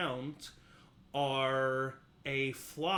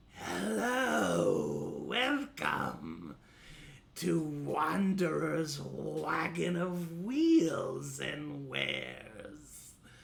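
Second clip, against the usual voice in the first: rough, rasping, raspy voice. A game master voices a creature speaking to the players, in a raspy voice. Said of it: "you hear a raspy voice say".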